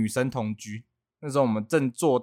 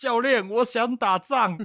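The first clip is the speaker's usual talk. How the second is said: put-on weepy blubbering sobs, very high and slow; 11 semitones higher than usual. Retelling a recruit who signed up and told the coach, imitating someone crying. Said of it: "哭着说".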